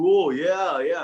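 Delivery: trying-too-hard casual voice. Retelling being offered a drink at a bar, acting out trying to sound cool. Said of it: "I was trying to be cool".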